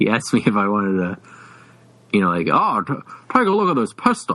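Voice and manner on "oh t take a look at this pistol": put-on Mid-Atlantic accent with a stumbling start.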